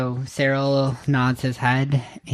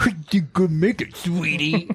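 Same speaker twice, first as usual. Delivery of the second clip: teasing, uncaring, mocking put-on voice; 4 semitones higher than usual. Mocking how another player just said a line: mocking another player's line. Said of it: "I didn't say it like that".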